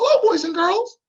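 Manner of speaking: very high-pitched little cartoon mouse voice. Trying out voices while feeling the vibration, talking like Mickey Mouse. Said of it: "try and talk like Mickey Mouse".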